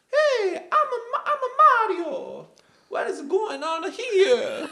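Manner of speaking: very high, slow, drawn-out goofy voice. Imagining a whole movie in the classic voice: Mario voice. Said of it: "you do the rest of the episode in that voice".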